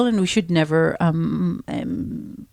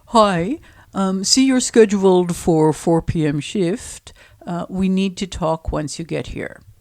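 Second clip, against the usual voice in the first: put-on male boss voice. Reading a boss's text messages aloud as a skit, in a man's voice. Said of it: "I'll try to do a man's voice".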